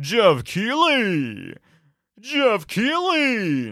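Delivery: big, swooping, very slow announcer name call. Calling out the awards host's name, Super Smash Brothers announcer voice. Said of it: "I'm trying to do like the Super Smash Brothers announcer voice".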